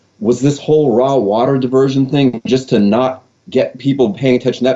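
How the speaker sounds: normal talking voice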